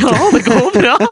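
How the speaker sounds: very high pitched, crying through the words. Retelling answering Asta when she asked if it was going well: imitating own past crying. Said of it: "og jeg grein!".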